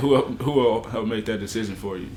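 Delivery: normal talking voice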